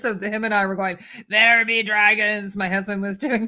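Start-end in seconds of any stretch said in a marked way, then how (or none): 1.3-2.6 loud, swashbuckling put-on pirate voice. Retelling doing the line at home with a spouse: pirate voice. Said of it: "we were both doing pirate".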